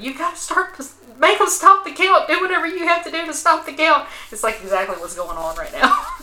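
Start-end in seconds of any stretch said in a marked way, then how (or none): 0.0-4.1 very high-pitched, shrill, raised screaming. Retelling a woman screaming at her staff, retelling her screaming at staff. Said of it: "she starts screaming at them".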